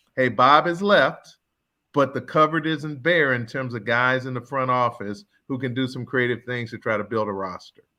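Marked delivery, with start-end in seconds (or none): none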